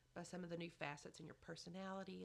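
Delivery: ordinary delivery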